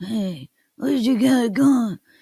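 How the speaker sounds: mumbled, unenunciated, words run together indistinctly. Showing how mumbling men talk, mumbled Marlon Brando voice. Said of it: "So we're talking like Marlon Brando".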